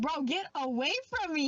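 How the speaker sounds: ordinary talk, nothing marked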